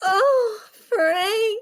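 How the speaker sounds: very high, loud cry full of pleasure. Telling how a sweet old lady reacted during a probe exam, imitating her pleasured voice. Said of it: "in her most pleasured voice".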